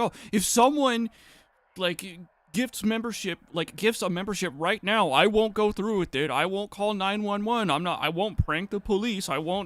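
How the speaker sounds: mock wheedling, begging, bargaining tone. Retelling a streamer begging chat for memberships: imitating a streamer begging. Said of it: "they beg their chat".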